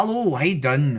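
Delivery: put-on Irish accent. Greeting a stranger in a put-on Irish accent. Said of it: "it's Irish accent for the rest of the stream".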